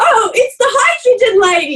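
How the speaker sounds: high, drawn-out yell, calling out. Retelling how a friend yelled out at a returning lady: imitating someone yelling. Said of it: "Trev yells out".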